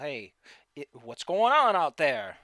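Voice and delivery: deep-voiced giant calling out. A storyteller voices a giant shouting; deep, loud thunderous voice. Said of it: "a very deep and loud, thunderous voice".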